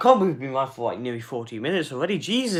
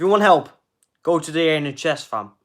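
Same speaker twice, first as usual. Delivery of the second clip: plain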